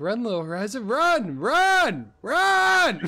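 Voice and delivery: loud, put-on sing-song yell, stretched, swooping, rising words. Arguing over who yelled first, mimicking the other person: imitating someone yelling. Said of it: "you're like".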